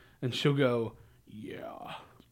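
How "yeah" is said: put-on deepened child voice, quieter. Retelling a niece's favorite trick: imitating a child's deepened voice. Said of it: "deepen her voice".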